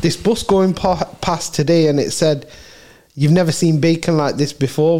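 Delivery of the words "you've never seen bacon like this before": ordinary talk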